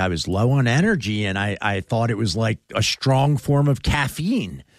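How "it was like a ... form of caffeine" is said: normal talking voice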